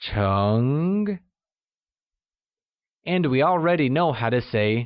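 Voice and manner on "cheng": mid-to-high rising tone on cheng. Mandarin lesson on the word for engineer, mid-rising tone on cheng. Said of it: "pronounced using a mid-rising tone".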